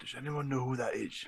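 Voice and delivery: very quiet, hushed half-whisper. Leaning over to two companions and asking quietly: half-whispering in character. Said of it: "and I'll whisper".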